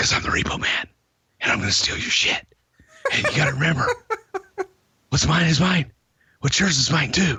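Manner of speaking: hushed whispering in a wrestler promo voice. Speaker mimics a wrestling promo, whispering in Repo Man voice. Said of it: "I don't know why I'm whispering".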